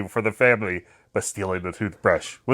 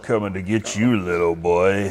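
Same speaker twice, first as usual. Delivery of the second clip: put-on creepy man voice, lower; 4 semitones lower than usual. Voicing a creepy man in a church: creepy man voice. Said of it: "creepy man in a church".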